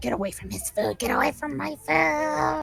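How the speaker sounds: high, shrieking goblin voice. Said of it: "he just shrieks more at you".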